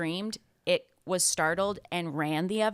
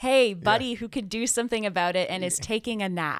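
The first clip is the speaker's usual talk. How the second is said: acted, pointed, accusatory and reproachful tone; 3 semitones higher than usual. Acting out the disciples waking Jesus in the storm: imitating an accusatory tone. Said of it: "an accusatory tone in the way that they".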